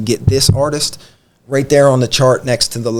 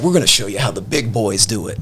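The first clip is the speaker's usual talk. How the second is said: mock condescending tone; 2 semitones lower, 3 dB quieter than usual. Retelling a producer's remark about their beat: imitating a condescending tone. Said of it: "just being real condescending".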